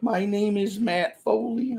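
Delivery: broken voice, high and slow. Trying out a motivational speaker character, doing a Matt Foley broken voice. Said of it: "I guess that's a little more broken voice".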